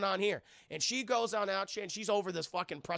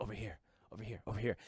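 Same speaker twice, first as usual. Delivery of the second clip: low, quiet, fast creepy voice. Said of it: "He's like".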